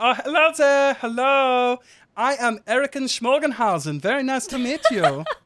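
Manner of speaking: put-on accented gnome voice. Voicing a gnome introducing himself to the players: gnome manager's put-on accent. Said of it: "You've gone as far as the accent".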